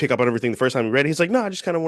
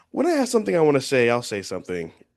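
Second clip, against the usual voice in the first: usual speaking voice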